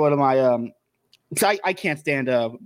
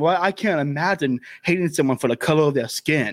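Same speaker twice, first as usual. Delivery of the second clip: put-on smug tone. Recounting an argument over jokes, the speaker quotes a friend's reply, mocking a smug friend. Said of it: "the smugly saying".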